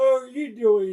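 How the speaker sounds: very high-pitched, spoken through a yawn. Chatting with viewers while shipping orders, greeting someone: yawning. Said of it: "Sorry, I'm yawning".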